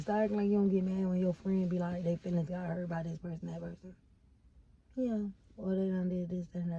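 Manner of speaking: gentle, soft, hushed delivery. Chatting about friends who stay mad, speaking in a soft voice. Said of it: "Where did that soft ass voice just come from?".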